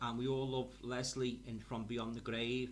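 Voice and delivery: ordinary talk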